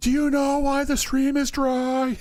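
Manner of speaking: loud, very high-pitched shouting. A character calling out to Crescenda that they can't hear her, yelling. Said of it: "Why are you yelling".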